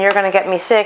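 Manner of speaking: ordinary talk, nothing marked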